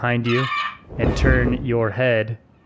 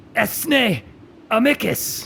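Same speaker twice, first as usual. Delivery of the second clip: grave, very serious battle-cry yell, very high pitch; 11 semitones higher than usual. Two kitsune pull out rifles and call out together, a very serious yell. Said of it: "they yell out in a very serious tone".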